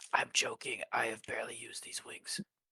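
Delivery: soft, hushed whisper. Playing a character in a group game, whispering to a nearby ally: whispering in character. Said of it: "I'm gonna whisper to Journey".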